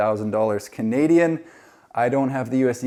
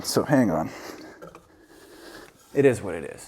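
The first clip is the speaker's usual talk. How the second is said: winded, out of breath, lower and quieter; 4 semitones lower, 4 dB quieter than usual. Going back down, talking to viewers, out of breath. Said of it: "I'm out of breath".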